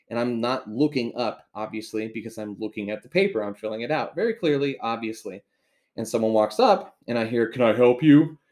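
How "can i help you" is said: booming, very loud, deep man's voice. Retelling how a clerk walked up and asked, imitating a deep voice. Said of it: "Deep voice".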